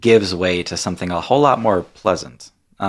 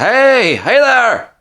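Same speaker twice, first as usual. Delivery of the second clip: very high, loud dwarven woman voice; 6 dB louder than usual. Voicing a dwarven woman by a bonfire who greets the travelers: dwarven woman character voice. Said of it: "this dwarven woman, and she says".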